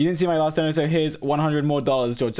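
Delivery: ordinary delivery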